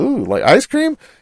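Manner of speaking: eager, thrilled, excited voice, high and small. Retelling a friend hearing about ice cream: imitating someone getting excited. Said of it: "got so excited, like, his eyes lighted up".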